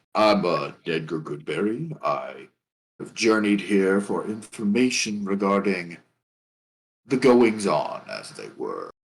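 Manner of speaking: big, absurdly deep, low voice. Voicing a small hobbit character introducing himself: voice far deeper than expected. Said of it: "this voice that is way deeper than it should be".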